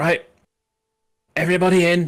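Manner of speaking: very high, top-of-the-lungs full-voice shout. Narrating a character behind the bar calling everybody in, shouting at top of voice. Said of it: "at the top of her voice she shouts".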